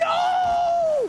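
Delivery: stunned, very high, loud yell.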